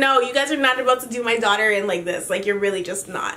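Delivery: ordinary delivery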